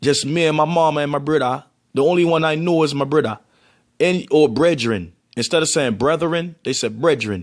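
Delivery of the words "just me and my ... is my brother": put-on Jamaican pronunciation. Explaining how people in Jamaica say brother, the speaker demonstrates: Jamaican accent. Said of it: "y'all don't even say brother".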